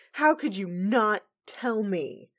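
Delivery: cross, indignant, grumpy yell, high and drawn out. Recapping a scene where Twilight confronts Shining Armor, retelling Twilight's grumpy yell. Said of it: "she's yelling at Shining Armor".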